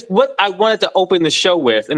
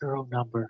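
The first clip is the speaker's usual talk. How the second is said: barely audible, soft, hushed mutter under the breath; 5 semitones lower, 16 dB quieter than usual. Retelling a movie line said under his breath: imitating an under-breath mutter. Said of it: "under his breath".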